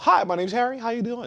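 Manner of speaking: put-on polished professional voice. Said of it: "See, there you go".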